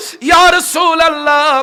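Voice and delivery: high, loud, anguished calling out.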